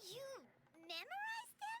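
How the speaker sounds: astonished, voice jumping very high. Reacting to another speaker's claim, surprised. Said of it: "You sound surprised".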